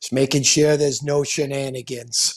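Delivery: thick put-on New York accent, an impression. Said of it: "he's got that thick New York accent".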